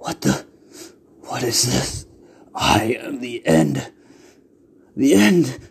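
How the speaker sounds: lich monster voice in sudden panic. Narrating a story, voicing a lich burning from the inside, in deep panic. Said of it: "the lich says, in a deep panic".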